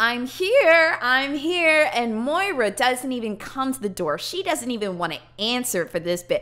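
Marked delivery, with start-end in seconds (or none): 0.0-1.9 put-on high, loud, drunken pleading. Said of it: "knocking and banging on the door, telling".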